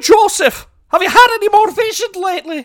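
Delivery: put-on very loud, high-pitched, terrible Irish accent. Retelling a story, the speaker voices a man calling out to Joseph, terrible Irish accent. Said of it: "a man with a terrible irish accent calls out he's just like".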